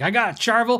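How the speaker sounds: put-on slight Southern accent. Retelling what a store customer kept saying: imitating a slight Southern accent. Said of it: "a little bit Southern accent".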